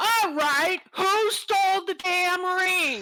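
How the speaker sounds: booming voice. A player uses thaumaturgy to make a voice ring out, booming voice. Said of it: "a voice booms out and says".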